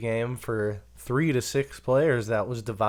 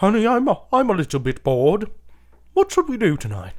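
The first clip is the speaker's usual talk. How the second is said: loud, high put-on British accent; 9 semitones higher, 6 dB louder than usual. Acting out how the game Clue was first thought up: British accent. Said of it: "I need to do it in".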